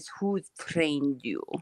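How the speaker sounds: put-on softly spoken with a thick Russian accent. Repeat what Samir Osmanagich said when told your experience, in a Samir Osmanagich voice, thick Russian accent. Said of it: "like thick, like Russian accent, he says".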